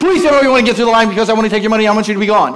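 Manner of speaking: breakneck, nonstop, super fast rattled-off gabble. A preacher imitates a woman he can't keep up with, talking very fast. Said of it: "She's saying it so fast".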